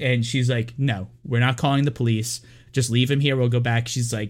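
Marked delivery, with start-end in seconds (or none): none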